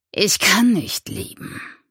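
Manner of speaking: forced out through a clenched jaw and gritted teeth. Questioned by the narrator, a man answers while facing someone else, through gritted teeth. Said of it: "presste er zwischen zusammengebissenen Zähnen hervor".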